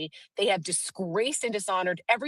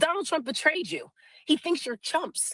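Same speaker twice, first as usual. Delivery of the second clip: pitched-up shouting; 8 semitones higher than usual. Retelling a heated exchange at a street corner: retelling own yell. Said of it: "I just yelled back at him".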